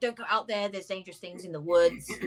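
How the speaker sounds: normal talking voice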